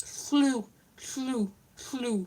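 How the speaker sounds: soft cartoon duck voice. Explaining a joke about the Welsh LL sound, in a Donald Duck voice. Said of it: "I'm doing the Donald Duck voice".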